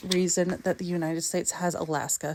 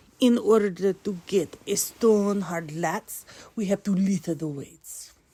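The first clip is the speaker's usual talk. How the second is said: put-on Russian accent over English. Giving a memory trick for the Baltic states, in a Russian accent. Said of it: "so put on your best Russian accent".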